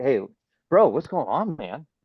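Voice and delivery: totally open, easy, very non-defensive, no guard up. Showing how to open a call with a client who wants to cancel: super non-defensive. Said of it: "super non-defensive".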